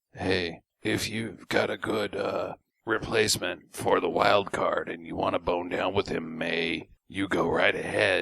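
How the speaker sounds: rough, creaky, rasping put-on character voice. Retelling a movie scene about a replacement wild card: Lance Henriksen impression. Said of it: "That's my Lance Henriksen impression".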